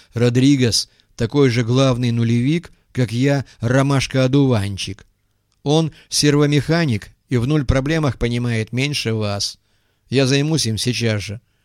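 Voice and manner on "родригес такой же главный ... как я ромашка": ordinary delivery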